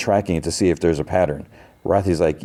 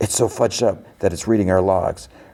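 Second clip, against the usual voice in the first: voiced stage whisper. Retelling a scene where a character half-whispers to the others: imitating a half-whisper. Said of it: "Then whispers to the others".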